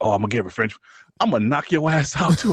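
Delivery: mock anime-style character voice. Retelling a fighter's reaction, imitating an anime character vowing revenge.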